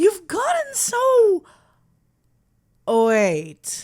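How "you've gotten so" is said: thrilled excited gushing, very high. Greeting the sweetheart on arrival, excited.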